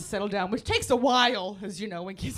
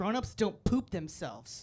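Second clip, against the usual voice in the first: put-on sassy know-it-all child voice; 2 semitones lower, 5 dB quieter than usual. Retelling what a little girl said at circle time: imitating a sassy kid. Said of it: "Real sassy, by the way".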